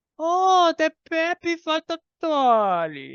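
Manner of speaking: very high, slow little gnome voice. Voicing a gnome waving a dolly at the party: gnome character voice. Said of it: "as he picks up a little dolly and he waves it at you guys and says".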